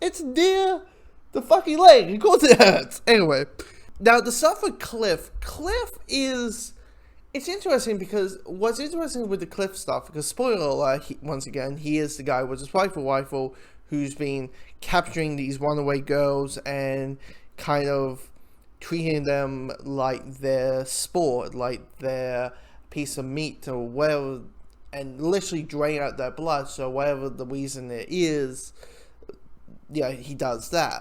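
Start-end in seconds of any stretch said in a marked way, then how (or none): 0.0-3.0 high, loud, exasperated voice. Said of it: "I'm like".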